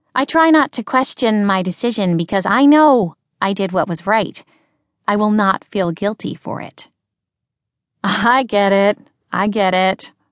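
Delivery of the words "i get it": said through a chuckle. Replying to a woman dropping obvious hints about how similar their situations are, chuckling. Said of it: "chuckling at the bright".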